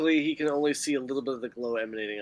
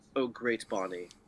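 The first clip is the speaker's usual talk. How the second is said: spiteful sarcastic tone, lower and quieter; 4 semitones lower, 7 dB quieter than usual. Playing a character who was told to do better: spiteful, sarcastic tone. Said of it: "You sense the spite and sarcasm in his voice".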